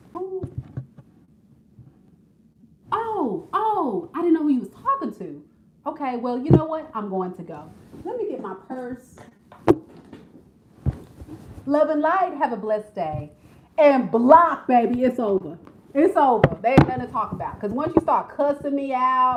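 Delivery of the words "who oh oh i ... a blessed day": pointedly petty, swooping sing-song delivery. Acting out a reaction to someone yelling: acting petty. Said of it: "I'm so petty. This is me".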